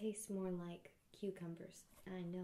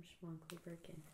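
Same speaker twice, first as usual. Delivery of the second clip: ordinary delivery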